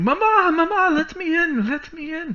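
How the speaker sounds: very high, loud, drawn-out yelling. Voicing a girl banging on the door, yelling. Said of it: "she's yelling".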